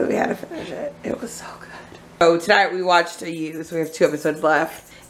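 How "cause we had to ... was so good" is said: secret, hushed whispered aside. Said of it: "'Cause I don't want my husband to know".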